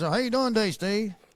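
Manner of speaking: stiff-jawed ventriloquist speech, mouth unmoving. Telling the others about an officer they used to work with: imitating Cranford's unmoving mouth. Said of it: "He talked like this".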